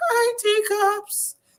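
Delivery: acted-out weepy, tearful, very high whimper. Imitating how she sounds when she goes live: imitating someone crying. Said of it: "it always sounds like she's crying".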